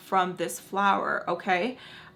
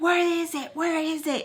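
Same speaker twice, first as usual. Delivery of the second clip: put-on shrill, furious, very high, drawn-out yell; 9 semitones higher than usual. Retelling a phone call where a man shouted demands, imitating an angry rant. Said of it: "he is going off".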